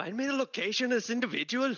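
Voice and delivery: put-on Scottish accent, very high-pitched. Voicing a character paying a gnome for a scry: Scottish accent. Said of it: "That was fucking Scottish".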